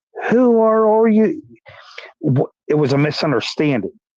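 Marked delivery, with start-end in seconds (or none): 0.3-1.4 play-acted yell, pitched very high and shrill. Retelling how a man across the street yelled at detectives: imitating a man yelling. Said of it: "he starts yelling".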